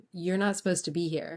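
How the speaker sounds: ordinary talk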